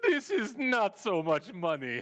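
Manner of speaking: high, drawn-out words bellowed through laughter. Retelling a guard's line after slapping money on his chest: imitating someone bellowing with laughter. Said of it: "he just bellows laughing".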